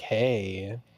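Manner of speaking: flirty put-on character voice. Showing how the character Frederico would greet someone: flirty Frederico hey. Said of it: "That's trying to be flirty".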